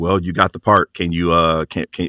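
plain

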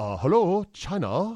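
light, slight put-on Chinese accent. After announcing the bit to the others, in a light Chinese accent. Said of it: "I'll do a light Chinese accent".

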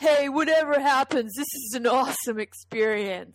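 spastically overexcited yell, high and loud. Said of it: "spastically overexcited, and he yells in [name]'s ear".

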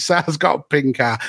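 usual speaking voice

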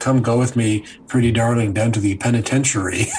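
normal talking voice

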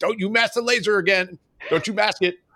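play-acted very high-pitched, nagging, scolding shout. Recalling how their RIOs used to yell at them about the laser, retelling a yell. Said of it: "my Rios used to yell at me".

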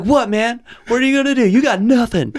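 play-acted, very high-pitched shouting. Speaker retells yelling through a window at a man punching the door, retelling own yelling. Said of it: "I'm like yelling at him through the window".

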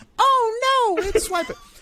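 very high cartoon voice, long stretched "oh". Retelling what Dora said about swiping, in a Dora impression. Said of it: "I love the Dora impression".

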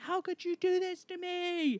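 put-on very high, piercing, shrill shriek. Retelling how a bleeding man yelled at the people around him: retelling a scream. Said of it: "And he's screaming".

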